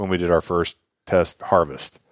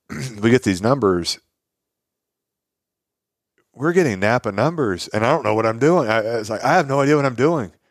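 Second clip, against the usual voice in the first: emotional voice with raised pitch; 5 semitones higher than usual. Recalling getting help during a hard stretch: getting emotional. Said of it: "I'm getting pretty emotional just talking about it now".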